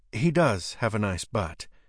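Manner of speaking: plain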